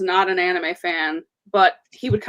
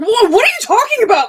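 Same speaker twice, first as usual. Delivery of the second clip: shrill, very high, loud, explosive angry yell, acted; 8 dB louder than usual. Showing how Boruto reacts when someone says something: Boruto blowing a gasket. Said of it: "blows a gasket".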